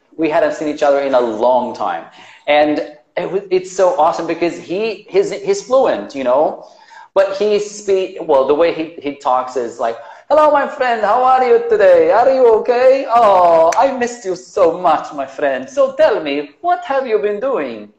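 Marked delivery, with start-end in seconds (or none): 10.3-17.8 put-on pitched-up, laid-on Arabic accent. Describing a fluent friend he reunited with, the speaker imitates his arabic accent. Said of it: "he has this Arabic accent".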